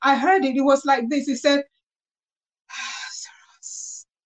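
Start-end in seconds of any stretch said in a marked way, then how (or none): 2.7-4.1 breathy voice, quieter. Retelling how a single word was spoken: said like a breath. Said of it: "like a breath".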